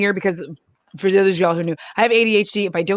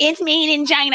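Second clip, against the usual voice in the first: acted-out, worked-up angry griping, pitched up; 8 semitones higher than usual. Imitating people angry at brands: imitating an angry complaint. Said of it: "you're getting angry and you're throwing a whole fit".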